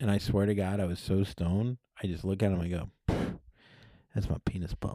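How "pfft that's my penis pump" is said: breathy, whispered delivery under the breath. Retelling own past words after being caught, Clint Eastwood voice. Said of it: "I said it like Clint Eastwood".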